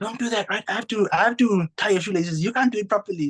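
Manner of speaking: put-on parent voice shouting.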